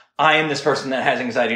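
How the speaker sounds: ordinary delivery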